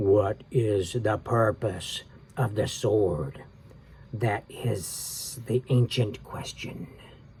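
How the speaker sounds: low, deep, enormous serpent voice. Reading a story aloud, the serpent asks Jack and Annie, in a low, deep voice. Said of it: "In a low, deep voice it said".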